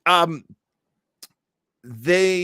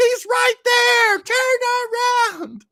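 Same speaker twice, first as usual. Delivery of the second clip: put-on high, slow, loud yelling kid voice. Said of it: "I remember being a little kid like".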